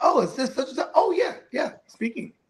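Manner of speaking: acted businesslike telephone manner. Acting out answering an unknown caller: switching to a professional phone voice. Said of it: "Then you get the professional voice".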